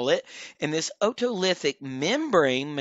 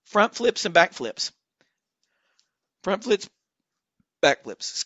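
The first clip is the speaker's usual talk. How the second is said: interrupted by hiccups, higher pitch; 3 semitones higher than usual. Explaining head movements to an audience, hiccuping. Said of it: "I keep hiccuping".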